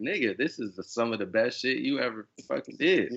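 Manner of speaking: ordinary talk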